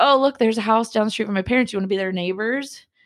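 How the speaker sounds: offhand, quick, teasing, joking tone. Speaker recounting what they jokingly said to the listener: retelling a joking remark. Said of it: "And I jokingly was like".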